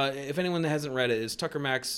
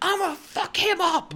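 mock, very high, furious raging scream; 5 dB louder than usual. Recounting answering her after his car got robbed: retelling screaming. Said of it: "just screaming".

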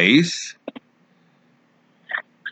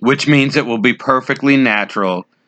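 normal talking voice

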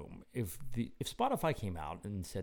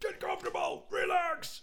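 very high, barked drill-sergeant shout. Leading a meditation as if a drill sergeant, drill sergeant shouting. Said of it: "Be like a drill sergeant".

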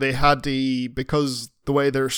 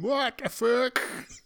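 bad, terrible, very high-pitched put-on voice; 11 semitones higher than usual. Imitating Eugene reacting while listening to this: terrible impression of Eugene. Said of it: "that's a terrible impression of Eugene".

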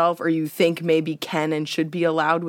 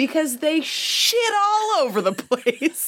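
mock, shrill, very high, very loud little-kid yell; 11 semitones higher than usual. Retelling a friend's three-year-old stopping on the street to answer, retelling a very loud reply. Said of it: "he stopped and said very loudly".

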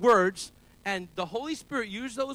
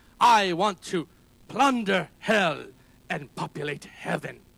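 put-on slow, preaching delivery in a thick German accent; 5 semitones lower than usual. A preacher quoting an evangelist's motto, in Reinhard Bonnke's thick German accent. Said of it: "with his thick German accent".

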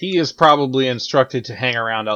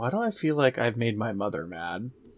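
very soft, hushed half-whisper barely above breath; 9 dB quieter than usual. A player's character speaks to Chub Chub; half-whispering. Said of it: "I'm gonna whisper to Chub Chub".

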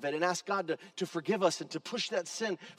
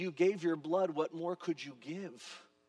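imitated tearful weeping voice, quieter; 5 dB quieter than usual. Retelling a doctor's words from his knees: imitating a doctor weeping. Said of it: "from his knees weeping".

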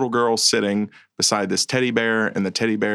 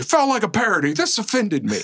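very high, animated, swooping delivery; 11 semitones higher than usual. Imitating the other speaker's film complaints: imitating Clint. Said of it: "That was a great impersonation of me".

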